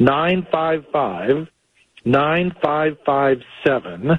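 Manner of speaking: slow, careful delivery. A host repeats the station's phone number for listeners, saying it slowly. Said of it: "just going to say it slow".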